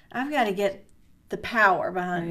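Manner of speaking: plain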